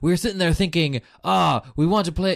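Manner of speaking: put-on slight French accent. Retelling what a presenter from the game's makers said: bit of a French accent. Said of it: "so I'm doing a bit of a French accent".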